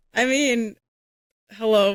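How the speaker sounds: voice crack partway through hello. Speaker joining in on a group discussion, voice cracking. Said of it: "voice crack".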